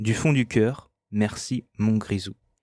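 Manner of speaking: usual speaking voice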